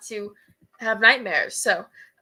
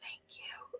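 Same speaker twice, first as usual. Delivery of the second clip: very soft, close, barely voiced, acted hushed whisper. Playing a character who thanks someone quietly: whispering in character. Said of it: "whisper, like".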